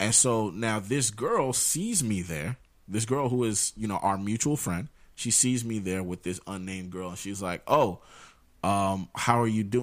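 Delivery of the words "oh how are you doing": mock pitying, concerned, sympathetic tone. Retelling how a mutual friend asked how things were going: imitating a pitying, concerned tone. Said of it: "the way she asked me how I'm doing".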